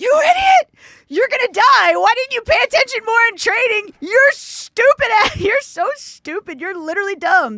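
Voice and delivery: frantic, panicked scream, very high and very loud. Retelling a tangled first parachute jump, reenacting screaming at oneself. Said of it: "I was looking up and I'm screaming".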